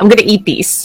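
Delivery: mock-serious deadpan delivery. Retelling a man's reply to a gift at PAX East, retelling a deadpan line. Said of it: "he literally deadpanned that".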